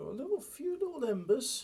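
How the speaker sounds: very high, rising, hopeful little falsetto. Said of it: "He says with a high-pitched falsetto voice".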